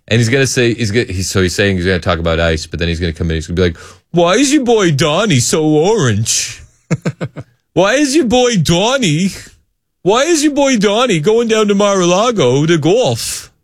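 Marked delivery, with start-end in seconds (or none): 4.1-13.4 put-on New Jersey accent, much higher and slower. Acting out what he's going to say when he comes in, new jersey accent. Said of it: "That's my best New Jersey accent".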